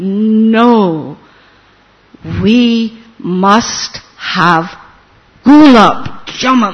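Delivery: imitated very low voice. Retelling Srila Prabhupada's answer about what sweets to make: Srila Prabhupada in deep voice. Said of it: "in a very deep voice".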